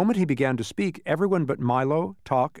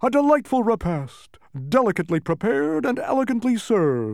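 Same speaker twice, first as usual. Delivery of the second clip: lofty, grand, pitched-up proclamatory delivery; 7 semitones higher than usual. After everyone finishes eating, a character speaks to no one in particular, announcing. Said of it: "he announced to no one in particular".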